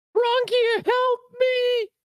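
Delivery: very high yelling cry. Voicing a fleeing enemy who calls to an ally: yelling for help. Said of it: "you hear him yell".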